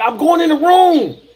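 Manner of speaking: mock fired-up scream, very high. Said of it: "he called me screaming at me".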